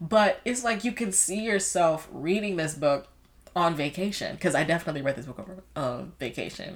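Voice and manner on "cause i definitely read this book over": very fast, rushed, rattled-off aside. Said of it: "I don't know why I said that so fast".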